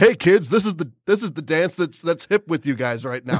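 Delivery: mocking, sarcastic, overeager, pandering sales-pitch tone. Mocking the movie's obvious pitch to kids: mocking an obvious pitch to kids. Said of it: "because it was such an obvious play".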